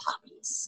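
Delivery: soft, breathy, unvoiced whisper.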